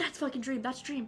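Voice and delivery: hushed whisper. Retelling pointing someone out to two friends seated beside, whispering. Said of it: "Like I'm like whispering".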